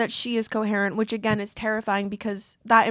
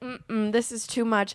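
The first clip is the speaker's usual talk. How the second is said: ordinary talk, nothing marked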